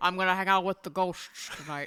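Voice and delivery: put-on Scottish accent. Joining in on the story about Sean Connery: Sean Connery impression. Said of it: "You had it for a second".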